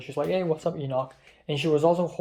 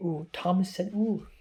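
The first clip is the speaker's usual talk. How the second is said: giggly, high-pitched, teasing mockery; 4 semitones higher, 3 dB quieter than usual.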